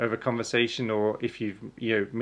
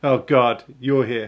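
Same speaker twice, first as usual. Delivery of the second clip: very loud, blunt, put-on rude delivery; 10 dB louder than usual. Showing a typical greeting between people in the UK: mock rude greeting. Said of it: "just rude to each other as a greeting".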